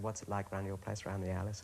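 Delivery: ordinary delivery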